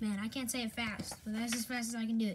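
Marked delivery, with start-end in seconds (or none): none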